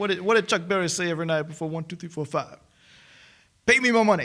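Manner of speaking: fast, high, bad mock Cockney accent. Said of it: "I love Basher in this scene".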